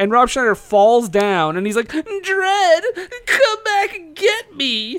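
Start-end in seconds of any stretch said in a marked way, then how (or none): 1.9-5.0 very high, slow, drawn-out, obnoxious wail. Retelling a movie scene where a character falls behind: obnoxious Rob Schneider character. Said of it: "Rob Schneider is just being the most obnoxiously".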